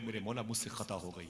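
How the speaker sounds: ordinary talk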